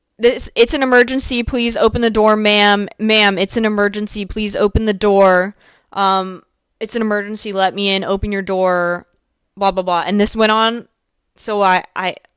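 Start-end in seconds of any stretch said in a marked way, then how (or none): none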